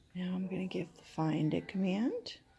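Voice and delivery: hushed whisper. Playing hide and seek with Boris, about to give the find command, whispering. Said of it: "I'm whispering because I don't want anyone".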